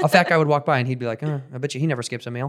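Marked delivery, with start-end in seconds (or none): 1.2-2.5 put-on mutter under the breath, quieter. Recalling a mean but funny man remarking on passersby, retelling a remark under his breath. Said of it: "but like under his breath".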